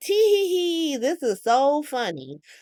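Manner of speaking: play-acted very high tittering giggle, drawn-out "hee". Speaker retells how a woman reacted on hearing the news, imitating Tracy bursting out laughing. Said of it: "Tracy just busts out laughing like".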